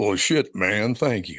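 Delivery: deliberate, unhurried, slow and drawn-out delivery. Retelling a reply on a morning show: imitating Sam Elliott. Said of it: "and he goes".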